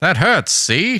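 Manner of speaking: put-on 1950s old-timey voice. Voicing a dolphin in a story set in the 1950s: old-timey 1950s voice. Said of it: "You can do your 50s voice".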